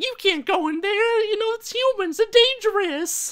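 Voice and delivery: tiny, very high, loud, squeaky squirrel-like critter voice. Imagining the squirrel sidekick in an animated movie, in a squeaky squirrel sidekick voice. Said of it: "high pitched squeaky voices".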